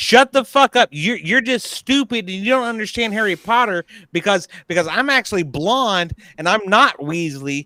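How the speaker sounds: plain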